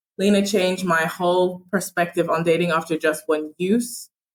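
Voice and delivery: normal talking voice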